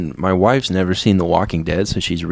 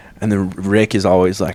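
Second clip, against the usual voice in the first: ordinary talk, nothing marked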